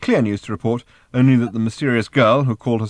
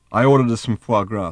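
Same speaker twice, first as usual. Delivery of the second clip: plain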